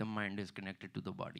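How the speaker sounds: put-on Indian accent. Retelling what is said to yoga students: indian accent. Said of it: "say basic shit in Indian accent".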